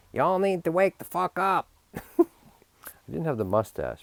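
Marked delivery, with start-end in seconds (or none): 0.2-1.7 mock bossy, pushy commanding tone, very high. Recalling how they used to tell people to wake up: mock-pushy commanding tone. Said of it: "I used to say it kind of pushy. I was like a little dictator".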